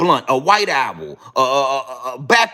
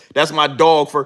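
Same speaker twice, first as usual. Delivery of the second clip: usual speaking voice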